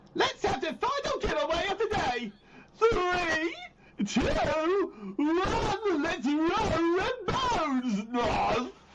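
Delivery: very high, silly, swooping cartoon voice, drawn-out "one". Asked for the silliest voice, announcing the day's final giveaway in a Pinky voice. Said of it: "Probably the silliest voice I can do is Pinky from Pinky in the Brain".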